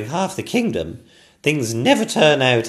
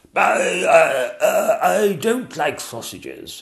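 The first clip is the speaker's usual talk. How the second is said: very slow, spluttered, sputtering words; 4 semitones higher than usual. Narrator reading the King answering the dragon from behind the throne, spluttering. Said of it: "spluttered the King from behind the throne".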